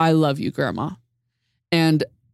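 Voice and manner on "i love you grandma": usual speaking voice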